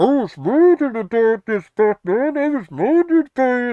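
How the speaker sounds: very high, loud, cheap cartoon-villain menace. Retelling [name] trying to sound intimidating, in a cheap Bond villain voice. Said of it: "I sound like a cheap Bond villain".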